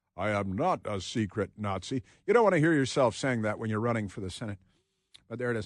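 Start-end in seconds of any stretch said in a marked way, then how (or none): 0.2-2.0 very slow, deliberate, each word drawn out. Imitating a clip of a Senate candidate denying being a Nazi: imitating a booming voice. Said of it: "he's got a booming voice".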